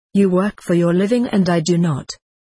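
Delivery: ordinary delivery, nothing marked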